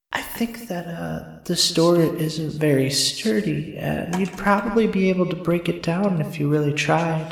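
whispering voice. In character, urging another character to break down a door: whispering voice. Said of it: "he hears her whispering voice again".

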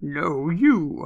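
deep, low voice. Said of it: "with a deep".

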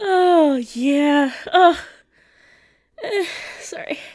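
crying with laughter. Recovering after the dick punch joke: laughing to tears. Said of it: "The tears out of my eyes".

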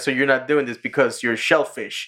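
plain

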